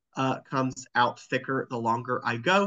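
ordinary talk, nothing marked

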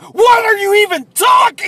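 acted yelling, loud and high.

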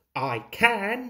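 huffing. An engine answers the bus who says he can't go faster: huffed. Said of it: "huffed Thomas".

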